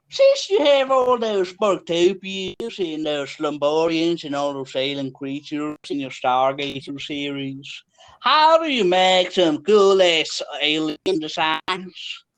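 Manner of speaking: mocking cowboy caricature voice. In a mock game show, the speaker asks a question: mock cowboy voice. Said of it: "He's mocking a cowboy".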